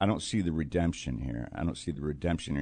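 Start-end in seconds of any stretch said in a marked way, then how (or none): none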